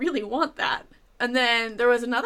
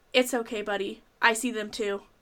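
mimicked solemn, grave tone; 3 semitones lower than usual. Retelling what a passing college guy said to the fussing boy, retelling a solemn line. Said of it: "In the most solemn voice I've ever heard".

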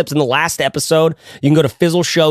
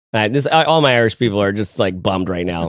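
usual speaking voice

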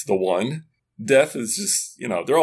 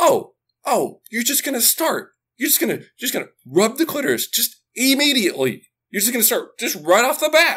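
acted-out, very high-pitched, screaming rant; 12 semitones higher than usual. Retelling a scene where one guy starts screaming at another: imitating someone screaming. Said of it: "he just starts like screaming at him".

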